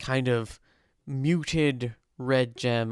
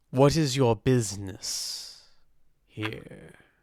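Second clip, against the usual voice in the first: vast, all-around voice of a huge being. Storyteller voicing a voice that comes from everywhere at once: booming voice. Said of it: "you hear this booming voice".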